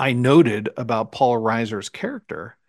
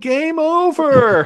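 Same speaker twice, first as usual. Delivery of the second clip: imitated panicked shouting; 5 dB louder than usual. Retelling Paxton's panicked lines: imitating Paxton shouting in panic. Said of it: "he's just shouting".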